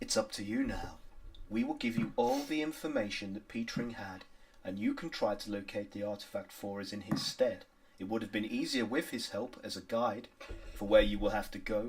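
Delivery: smooth creature voice. Voicing the silky one offering the players a choice: voicing the silky creature. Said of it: "the silky one says".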